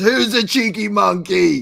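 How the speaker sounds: very high, very loud, slow drawn-out character yell. Imitating a comedian's character running out on stage: Mike Myers Gong Show character voice. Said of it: "his character from The Gong Show, where he runs out and he goes".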